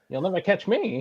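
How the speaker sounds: shrill, very high, very loud, shrieking villain voice. Imagining someone running off with a swag bag: Joker voice. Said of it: "trying to sound like the Joker".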